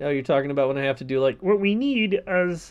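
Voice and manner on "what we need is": slow, drawn-out puppet voice. Asked to do Kermit, the speaker slips into a Kermit voice. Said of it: "That's Kermit! That's perfect".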